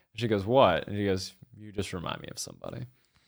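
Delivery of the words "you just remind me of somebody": mock deadpan delivery, much quieter. Retelling a scene, quoting a man's reply to a woman: retelling a deadpan line.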